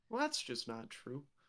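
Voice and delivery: hurt, wounded, soft protesting tone. Objecting to the other player's remark about a teammate, sounding hurt. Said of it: "Why did you sound so hurt by that?".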